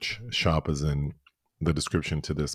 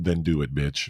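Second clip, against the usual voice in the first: ordinary talk, nothing marked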